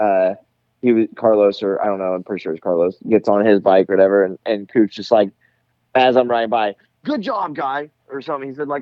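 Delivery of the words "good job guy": very high, dripping, heavily sarcastic mock-gushing tone. Retelling what another rider said as the speaker rode by: mock super sarcastic praise. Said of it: "like being super sarcastic".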